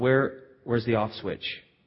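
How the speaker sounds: exasperated, frustrated tone. Retelling own reaction to the daughter's repeating: retelling own exasperation. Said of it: "the blood starts to boil".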